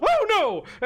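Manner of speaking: shrill, very high, scared, frightened yelp. Voicing a character who then hides behind a table: frightened cry as Thavius. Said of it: "and he goes".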